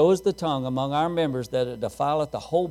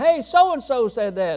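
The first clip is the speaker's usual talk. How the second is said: mock sudden high, loud blurt, words tumbling out; 9 semitones higher, 5 dB louder than usual. Telling a story where a young boy calls out to a preacher, retelling a blurted outburst. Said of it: "blurted out".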